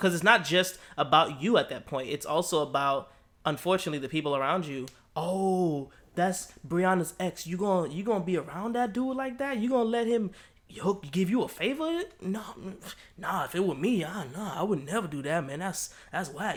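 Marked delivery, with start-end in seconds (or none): 5.1-16.6 high, dopey, clueless dumb-guy voice, long drawn-out oh. Speaker acts out a guy reacting to a friend's ex; stupid guy impression. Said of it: "That's my best impression of a stupid guy".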